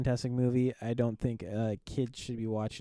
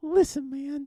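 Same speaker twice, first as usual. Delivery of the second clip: squeaky, very high-pitched cartoon-mouse voice; 3 dB louder than usual. Imitating what Bob always says, in a voice like Mickey Mouse. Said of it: "He sounds like Mickey Mouse".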